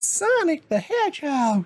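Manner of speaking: odd put-on voice, very high and swooping. Naming a game just finished, random put-on voice. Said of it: "Don't know what that voice was".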